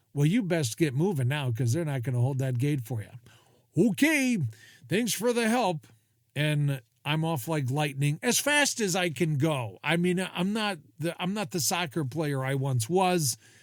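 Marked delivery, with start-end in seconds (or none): 0.1-3.8 put-on dry, unbothered, matter-of-fact, unhurried deadpan delivery. Retelling a flight attendant's reply about a boarding flight: imitating a deadpan response. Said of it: "Her deadpan response was".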